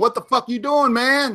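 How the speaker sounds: high shouting. Retelling being the one at the club: imitating yelling at the dj. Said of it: "yelling at the D J going".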